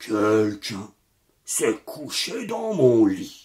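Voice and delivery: large, deep papa bear voice, exclaimed. Reading a children's bear story aloud, voicing Papa Bear in his big voice. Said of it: "s'écria le papa ours de sa grosse voix".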